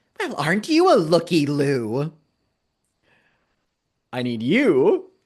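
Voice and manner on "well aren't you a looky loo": slightly warped, high, swooping voice. Voicing a severed head in a fridge speaking: slightly warped voice of the head. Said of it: "in her voice, though slightly warped".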